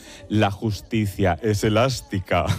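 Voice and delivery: low, deep, utterly wicked villain voice. Recalling a phrase from a series character, in Concha Velasco's very evil character voice. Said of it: "decía así con voz de muy mala, malísima".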